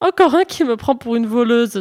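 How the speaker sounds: exclaimed while laughing. As a villager slams his shutters on seeing her face, she exclaims while laughing. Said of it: "s'écria-t-elle en riant".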